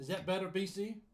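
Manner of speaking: loud, high calling out, almost a shout. Checking if the other speaker can hear now: speaking loudly, near yelling. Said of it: "I feel like I'm yelling now".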